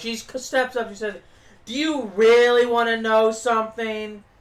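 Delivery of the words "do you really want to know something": loud, super annoying voice, as annoying as possible. Retelling a wrestler's promo line: imitating an annoying voice. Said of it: "In the most annoying ass voice possible".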